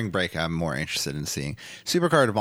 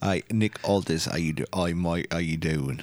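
put-on English accent. Greeting people in a Nick Aldis impression. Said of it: "he's English, right?".

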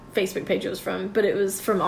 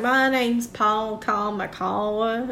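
heavy, slow, thick Southern country drawl. Describing a man with Japanese parents raised in Roane County, imitating Paul Kamikawa's country accent. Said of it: "he is super country".

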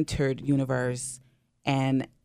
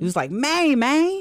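Memphis-accented Maine, emphatic, much higher, louder; 13 semitones higher, 4 dB louder than usual. Showing the inflections of Memphis vernacular, Memphis way of saying Maine. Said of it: "all the ways you can say Maine".

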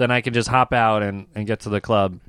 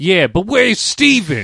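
loud, high put-on Boston accent, animated swings; 7 semitones higher, 5 dB louder than usual. Retelling what the comedian at the door said: imitating a Boston accent. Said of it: "he's got, like, a Boston accent".

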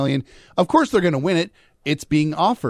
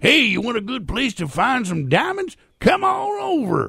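put-on high-pitched voice of an old-time prospector; 9 semitones higher than usual. Imagining a job at the park, playing the old prospector, in an old prospector voice. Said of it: "be the old prospector".

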